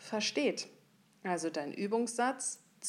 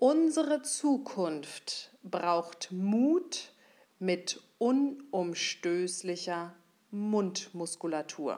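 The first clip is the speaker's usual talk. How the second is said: very slow, deliberate, word-by-word dictation pace; 4 dB louder than usual. Saying a practice sentence once so listeners can write it down: slow. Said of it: "ich sage es einmal langsam".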